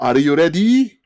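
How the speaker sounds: put-on high, loud Japanese-accented English. Imitating english self-introductions pronounced the japanese way: japanese accent. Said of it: "they would always like pronounce it the Japanese way".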